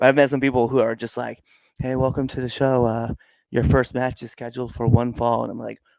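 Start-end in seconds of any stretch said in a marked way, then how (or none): 1.8-5.4 dull, flat, energy-free monotone announcer voice. Complaining about bad MCs at shows: imitating a monotone announcer. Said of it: "why do you sound like that?".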